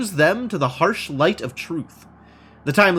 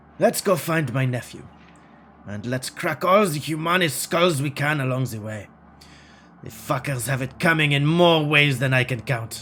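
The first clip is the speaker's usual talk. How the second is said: put-on German accent. Voicing a character talking about his nephew: Dietrich's German accent. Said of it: "try and find a German accent".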